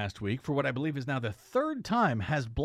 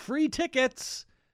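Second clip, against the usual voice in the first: mock scream, high and slow. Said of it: "text messages screaming".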